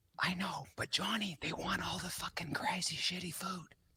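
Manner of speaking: whispering. Answering another speaker's remark on boring food: whispering. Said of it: "So that's why I'm whispering".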